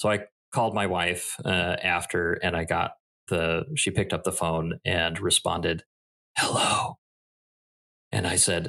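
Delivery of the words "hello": imitated whisper. Retelling how his wife answered the phone: imitating a whisper. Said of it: "Why are we whispering?".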